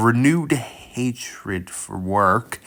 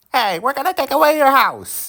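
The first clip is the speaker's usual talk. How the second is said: put-on horrible high mid-Atlantic accent; 3 dB louder than usual. Mocking the claim about communists, voicing them in a horrible mid-Atlantic accent. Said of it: "That was a horrible mid-Atlantic accent".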